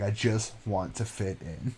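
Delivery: soft, very slow, calm, composed voice. Comparing a calm movie character to another figure: Patrick Bateman voice. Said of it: "so calmly and, like, collectively and well put together that it's like fucking Patrick Bateman's like".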